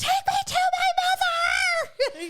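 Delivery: acted, very high, freaked-out tone. Retelling her eardrum pain to a friend, quoting her past self: retelling freaking out. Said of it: "I'm freaking out".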